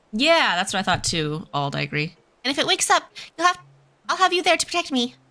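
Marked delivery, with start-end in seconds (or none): 2.4-5.0 put-on, high, fast cat girl character voice. Speaking in character to another character, in a cat girl voice. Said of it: "I'm trying to do my best cat girl voice".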